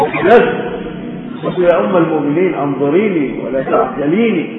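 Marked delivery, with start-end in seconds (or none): none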